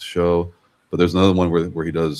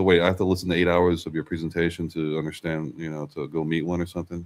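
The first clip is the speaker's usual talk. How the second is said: plain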